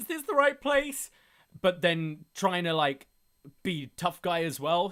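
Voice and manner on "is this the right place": mock frightened, very high-pitched, scared voice. Retelling a wrestler searching a haunted house: imitating a scared Cameron Grimes. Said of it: "very, very scared".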